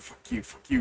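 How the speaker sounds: hushed, whispered mutter under the breath. Retelling a story, acting out a man muttering at someone, imitating muttered 'fuck you'. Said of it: "he sees him like muttering".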